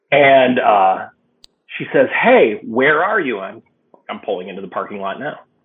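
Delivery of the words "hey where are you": put-on drunken slurred speech, louder. Retelling a phone call from a drunk caller: imitating drunken slurred speech. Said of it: "and she's slurry".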